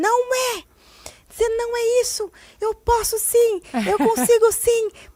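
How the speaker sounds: put-on, very high, drawn-out, upset voice. Retelling how her son reacted when she raised it: imitating son getting upset. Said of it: "Ficou nervoso".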